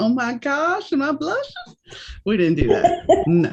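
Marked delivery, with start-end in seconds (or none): 0.0-1.7 high, mock, movie-style New Orleans accent. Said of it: "we didn't sound like this".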